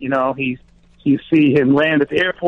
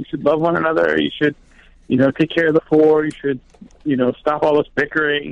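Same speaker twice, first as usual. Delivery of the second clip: normal talking voice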